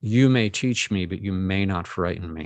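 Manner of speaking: mock steady, stern, firm, commanding voice. Retelling what they said when the room began to change, retelling a stern command. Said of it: "I just very sternly said".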